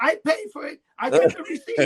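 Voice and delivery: very high, shrill, loud screaming. Retelling a man running through a store from the courtesy desk, imitating him screaming. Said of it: "he's screaming in the store".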